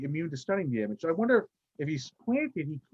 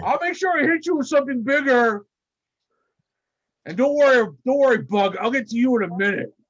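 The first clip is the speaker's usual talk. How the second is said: put-on character voice, higher and louder; 8 semitones higher, 9 dB louder than usual. Voicing Blob thanking a player's character: voicing Blob. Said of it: "And Blob's like".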